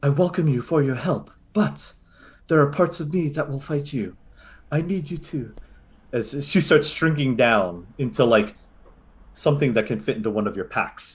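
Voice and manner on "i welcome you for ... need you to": higher-pitched female voice. Voicing the mushroom mother speaking in the players' heads: female voice in your head. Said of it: "you hear a female voice in your head go".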